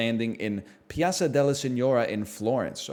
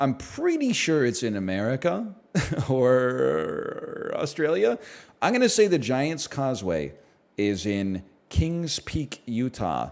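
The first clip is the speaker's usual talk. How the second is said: general American accent. Showing the Giants Causeway on screen, the speaker switches to an American voice. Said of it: "American Voice".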